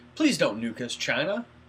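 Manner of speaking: mocking, scornful, derisive tone. Mocking the actor's scene thanking China: mocking Robert Downey Jr. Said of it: "mocking Downey Junior and everyone else".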